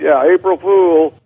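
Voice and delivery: shrill, very high, loud joking yell. Speaker recalls the coach saying there were no brakes, retelling own yell. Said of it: "And I yelled out".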